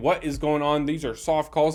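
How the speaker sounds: usual speaking voice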